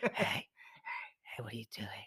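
hushed, breathy whisper. Retelling waking a friend in the night: imitating a whisper. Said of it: "So I whisper at Danny".

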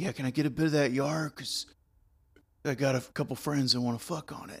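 soft, slick, oily, greasy voice. Retelling what T-Bone asked at a party, in T-Bone's greasy voice. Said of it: "he also said with his greasy voice".

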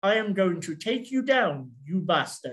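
put-on plummy, posh upper-class British accent. Retelling how old kung fu films were dubbed: imitating a posh British dub voice. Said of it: "dubbed it into, like, posh British voices".

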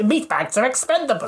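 robotic droid character voice. Quoting the character after guessing it: HK-47 voice. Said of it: "H K forty-seven".

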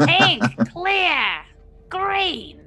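squeaky, very high goblin voice, yelling. Calling out a list of colors, in a goblin voice. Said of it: "That's my goblin voice, Rose".

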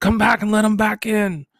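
acted-out, very high-pitched, carrying yell. A father acts out calling his son back to let the dog in, retelling a yell. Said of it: "I'll yell out".

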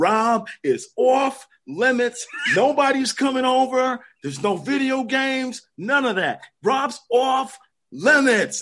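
put-on New York accent. Retelling getting yelled at, the speaker imitates Pops in a New York accent. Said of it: "in this New York accent".

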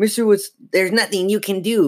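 snarling. Mr. Wood, the dummy come alive, to the people holding him: snarling. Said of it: "Mr. Wood snarled".

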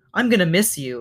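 ordinary delivery, nothing marked

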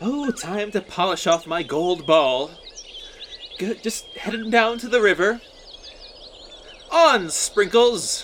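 high, playful princess voice. Acting out a sketch about the princess and the frog: playing a princess. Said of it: "I kinda wanna be the princess".

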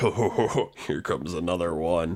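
low-pitched talking spider voice. Narrating two spiders speaking as the players approach the building: talking spider voices. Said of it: "you hear in Spider two voices going like".

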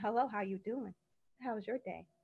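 very quiet, soft, proper and polished professional tone. Speaker shows they can switch from slang, in a professional voice. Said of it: "Now I can get professional".

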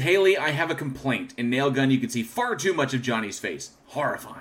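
usual speaking voice

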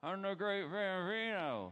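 mock garbled, muffled speech, mouth full, high, slow. Retelling a movie scene with a candy cigar in the mouth: Ham talking with cigar in mouth. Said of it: "He puts it in his mouth and he says".

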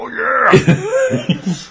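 very high, loud wrestler-style yell. Retelling yelling at each other during a long move: yelling like Macho Man. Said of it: "yelling at each other like Macho Man".

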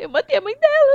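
very high, tearful, wailing sobbing voice. Retelling a story, the speaker quotes a teacher as she leaves, imitating someone crying. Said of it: "ela sai chorando assim e fala".

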